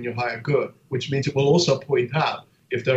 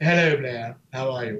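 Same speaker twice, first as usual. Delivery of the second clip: put-on English assistant voice. Describing the phone's voice setting, the speaker imitates the Siri English voice. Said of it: "mine is an English voice, and it always goes like".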